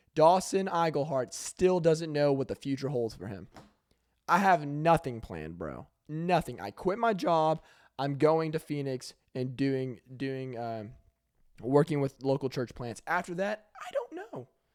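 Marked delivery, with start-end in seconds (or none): 13.8-14.5 squeaky, high voice crack on the words. Talking about having nothing planned after quitting a job, the speaker's voice squeaks. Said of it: "my voice squeaked".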